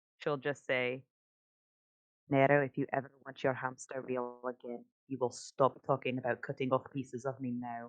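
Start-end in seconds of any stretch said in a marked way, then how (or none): 2.3-7.9 hushed, very soft, quiet, low voice. Speaking in character to nero as they walk back, very soft, quiet voice. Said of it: "saying something very softly in a very uncharacteristically quiet voice".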